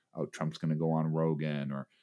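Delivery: ordinary talk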